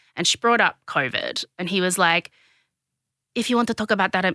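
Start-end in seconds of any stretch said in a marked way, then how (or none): 3.4-4.4 fast, put-on Spanish woman's accent creeping in. Retelling a man's reply when an interviewer raised a topic, in a put-on spanish lady voice. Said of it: "why am I a little Spanish".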